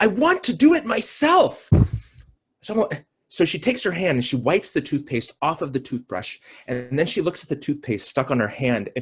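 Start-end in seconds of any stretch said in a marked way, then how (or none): 0.0-1.7 put-on shrill child scream, very high, very slow. Retelling a bathroom struggle with a four-year-old daughter: imitating a child screaming. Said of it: "she starts screaming".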